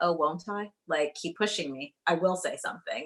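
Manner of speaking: usual speaking voice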